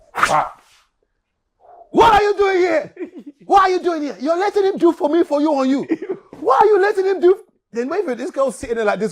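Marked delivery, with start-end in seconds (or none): 1.9-7.3 high, loud, demanding scolding tone. Retelling how his auntie walked in and found them: imitating his auntie scolding. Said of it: "So my auntie walks in".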